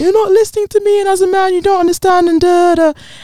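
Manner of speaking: acted hysterical crying shout, high and tearful. Retelling a woman shouting at a man: imitating someone shouting while crying. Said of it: "hysterically crying, like, pointing at him, like, literally, like, shouting at him".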